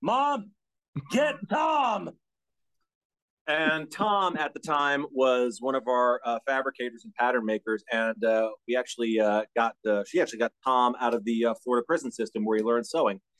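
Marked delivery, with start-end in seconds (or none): 0.0-2.1 put-on shrill, piercing yell, pitched way up. Retelling calling for help while hunched over, stuck: imitating own past yell. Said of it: "I just yelled".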